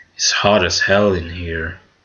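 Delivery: mock deadpan, very flat and neutral, no feeling. Imitating how a game voice actor delivers James's line: very neutral. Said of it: "very neutral and shit".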